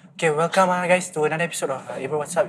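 hushed, soft close-mic half-whisper. Retelling how the first podcast episode was opened: imitating their own past half-whisper. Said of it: "we were whispering like".

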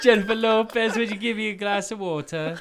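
put-on British accent, very high pitched. Showing the others the accent always used: British accent. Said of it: "You do such a good British accent".

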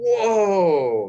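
high, loud, amazed, blurted voice.

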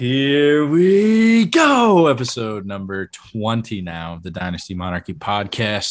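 very loud, upbeat, swooping, excited host hype. Opening a new episode of the dynasty monarchy podcast after the hosts are introduced, enthusiastic and upbeat. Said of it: "I sound enthusiastic and upbeat".

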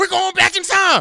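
shrill, very high, booming full-blast shout. Imagining an actor cast as Doc Brown, saying the line: Kevin Hart voice. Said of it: "Kevin Hart doing his little thing in his voice".

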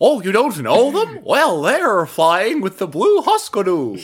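high, squeaky, sing-song voice. During a game session, riffing on a Seuss-sounding name, Cat in the Hat voice. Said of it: "That was my Cat in the Hat voice".

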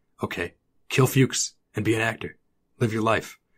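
put-on stoic, creepy voice. Retelling how Taylor questions Barry: imitating Taylor's stoic creepy way. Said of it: "very stoic, like, creepy way".

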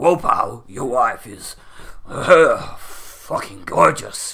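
loud, very slow drawl, slavering from the mouth corner. Imagining an interview with a wrestler, doing a Vince McMahon impression. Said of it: "Was that a good Vince McMahon impression?".

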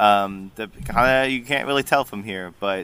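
ordinary delivery

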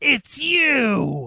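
high, loud scream with the you stretched long. A character recognizes the halfling from a dream, screaming. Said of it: "I scream".

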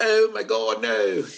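fake British accent. Retelling own past reaction to a feared answer: put-on british accent. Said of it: "The great British accent".

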